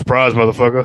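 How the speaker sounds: mock gruff policeman voice. Quoting a TV cop character's catchphrase: imitating Sergeant Doakes. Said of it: "And you see Sergeant Doakes".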